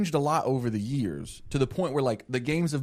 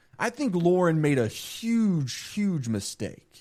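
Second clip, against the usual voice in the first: plain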